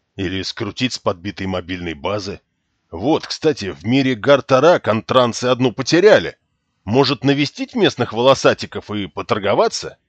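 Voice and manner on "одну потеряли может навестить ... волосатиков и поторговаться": ordinary delivery, nothing marked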